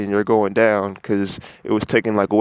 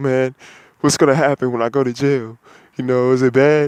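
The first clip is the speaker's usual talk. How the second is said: frightened, scared, pleading tone; 4 semitones higher than usual. Retelling asking a police officer about jail, imitating a scared plea. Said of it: "talking to the cop all scared".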